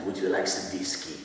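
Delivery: put-on low, thick Eastern European accent. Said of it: "he talks like this all the time".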